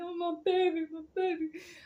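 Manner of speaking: very high, sobbing, crying wail. Retelling finding the cat safe after it went out the window: imitating own past crying. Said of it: "I was crying like a little bitch".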